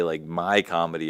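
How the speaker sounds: ordinary delivery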